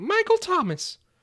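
very high, loud cartoon mouse voice. Answering a fill-in-the-blank question in a silly voice: sounding like Mickey Mouse. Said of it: "you sound more like Mickey Mouse now".

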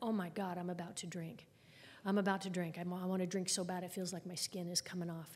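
plain

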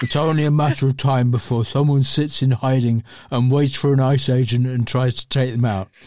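words mushed as if mouth full of cheese. Quoting a man and mocking how he talks, in a mouth-full-of-cheese voice. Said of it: "He talks like he's got a mouth full of cheese".

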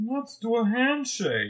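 stretched long with swooping pitch. Quoting Mobius hugging Loki in the show, doing Owen Wilson. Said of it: "I have a better Owen Wilson".

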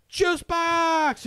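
mock very high, loud yell, "box" drawn out. Retelling how a 60-year-old man yelled at a girl, imitating him yelling. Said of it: "just starts yelling".

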